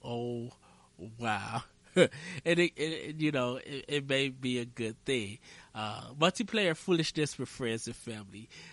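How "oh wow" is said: flat, dry deadpan. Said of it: "sometimes deadpan delivery is just like".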